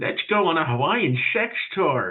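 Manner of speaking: put-on elderly voice. Praising a bit someone does, the speaker mimics its old person voice. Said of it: "The old person voice that Bill does".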